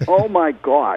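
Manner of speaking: put-on Boston accent. Retelling what the bartender said one night, in his Boston accent. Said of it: "with his Boston accent".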